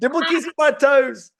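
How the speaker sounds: very high, loud, thick Eastern Cape South African accent. Asked what studs he has, answering in a thicker Eastern Cape accent. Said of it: "why did your accent get thicker".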